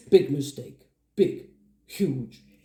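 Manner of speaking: weighty, measured film-star delivery, low, slow, deliberate. Trying a quoted film line as Idris Elba: Idris Elba impression. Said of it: "I'm gonna try, uh, Idris line".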